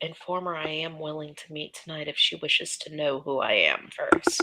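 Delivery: soft, hushed half-whisper with no voice. Speaking in character to Cora at close range: half-whispering. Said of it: "Whispered Cora".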